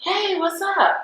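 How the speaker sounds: mock too-cool, breezy tone, very high pitch. Retelling how they greeted someone while hiding excitement: imitating acting too cool. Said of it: "too school for cool".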